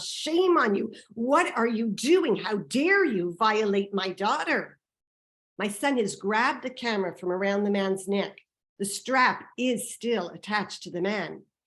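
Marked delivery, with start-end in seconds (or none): 0.0-4.8 acted screaming. A mother retells confronting the man with the camera, re-enacting her own screaming. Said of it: "I am now screaming all manner of".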